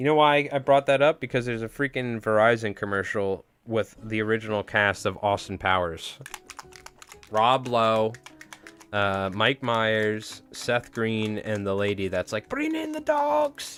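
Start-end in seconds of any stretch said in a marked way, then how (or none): 12.5-13.8 very high-pitched, shrill, shrieking scream. Recalling an Austin Powers cast member: imitating a screaming lady. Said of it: "That lady or whatever that screamed".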